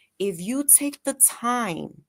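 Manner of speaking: slowed, slow, calming voice. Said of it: "you see how I'm slowing my voice".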